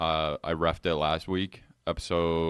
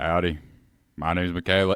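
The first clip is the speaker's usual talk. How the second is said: fake cowboy accent, louder; 5 dB louder than usual. Introducing herself at the start of the show: put-on cowboy voice. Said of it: "the cowboy sober one".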